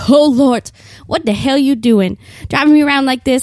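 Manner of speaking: put-on character voice, yelling. Picturing the car yelling when the exclamation light comes on: yelling in a Madea voice. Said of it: "yelling at me in a Medea voice".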